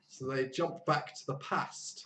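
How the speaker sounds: put-on northern English accent, whispered. Speaker retells what someone said, putting on a northern English accent. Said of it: "That's a that's a great northern accent".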